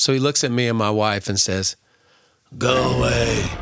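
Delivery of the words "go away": put-on voice of a twisted king. Retelling what a man said to you and your wife, in a twisted king voice. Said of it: "with some twisted king voice".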